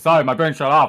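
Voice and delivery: mock drooling, spaced-out, dazed voice. Imitating oneself as a bored player, drool dripping: mock drooling spaced-out voice. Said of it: "drool slowly dripping out of my mouth, being like".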